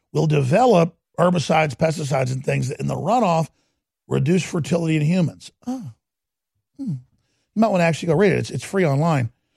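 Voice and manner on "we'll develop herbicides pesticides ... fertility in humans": ordinary talk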